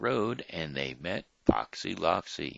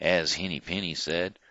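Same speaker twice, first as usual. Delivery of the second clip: ordinary delivery, nothing marked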